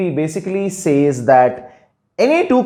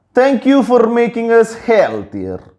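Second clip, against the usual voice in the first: bad, horrible fake Russian accent, pitched up; 6 semitones higher than usual. Voicing Russians' reaction, in a horrible Russian accent. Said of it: "Horrible uh, Russian accent".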